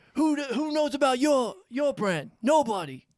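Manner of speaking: really angry, high-pitched rant. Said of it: "he starts getting, like, real, real angry".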